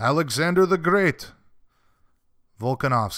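put-on Russian accent. Announcing a fighter after ending a call with him, in a put-on Russian accent. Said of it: "I did a Russian accent there".

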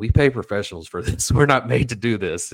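put-on bone-dry, matter-of-fact tone. Retelling what a man said while on camera, imitating a dry remark. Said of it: "it was just so dry".

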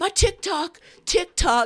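screaming, very high-pitched, shrill and loud. Retelling how a college kid with his phone kept screaming; retelling a scream. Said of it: "he's just screaming".

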